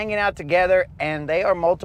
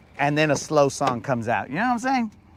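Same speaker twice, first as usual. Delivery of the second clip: plain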